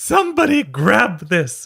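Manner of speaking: very high, swooping haughty voice, full of airs. Retelling what a man shouted as he threw a box, haughty Mary Poppins voice. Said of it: "I don't know why I gave him that voice".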